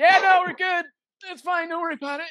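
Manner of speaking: acted very high, strained, pained voice, struggling to finish. Retelling a hurt teammate's reply after falling off: imitating someone barely able to speak. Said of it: "he can barely finish the sentence".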